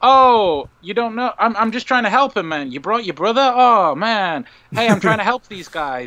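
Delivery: mock, very sympathetic, helpful tone, pitched high. Retelling a movie scene: imitating the Doctor sounding sympathetic. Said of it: "he sounds really sympathetic".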